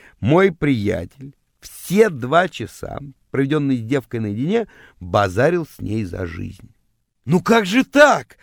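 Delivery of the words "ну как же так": high, loud, aggrieved howl of wounded offense. After the girls have left, the narrator wails at his friend, offended. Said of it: "обиженно вопил я".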